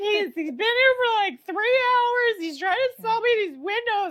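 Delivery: put-on near-tears voice. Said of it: "on the verge of tears".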